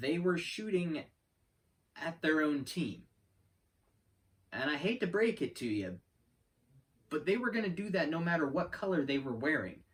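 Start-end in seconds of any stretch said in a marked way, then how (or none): 0.0-3.0 drawn-out, slow, deliberate word-by-word delivery. Repeating the previous sentence for emphasis, said slowly. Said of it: "let me say that again slowly".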